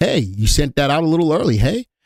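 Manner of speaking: play-acted, slightly smug and knowing tone. Retelling a remark about an alert sent too early: imitating Joey's smug tone. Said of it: "in his smug way".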